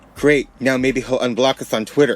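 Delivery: plain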